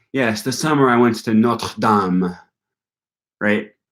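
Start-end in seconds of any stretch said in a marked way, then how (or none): 0.1-2.3 affected, pretentious French pronunciation of Notre Dame. Mocking people who pronounce foreign place names pretentiously: pretentious French pronunciation. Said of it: "sounding pretentious and saying".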